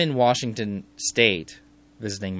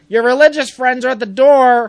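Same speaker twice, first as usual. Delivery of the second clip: very loud, shrill, high-pitched yell; 12 dB louder than usual. Speaker retells someone calling from the living room about a knock, retelling a yell. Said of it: "he yells to me".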